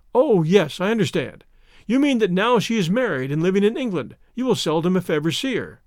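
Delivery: plain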